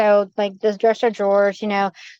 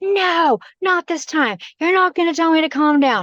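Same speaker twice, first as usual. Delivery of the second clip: put-on panicked scream, pitched higher; 7 semitones higher than usual. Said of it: "I ran out of my room and I was screaming".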